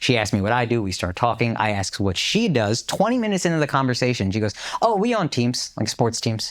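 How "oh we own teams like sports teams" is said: gentle, sweet tone, no arrogance. Retelling what a girl at their table said: imitating someone speaking sweetly. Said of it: "Not, like, arrogantly, very sweetly".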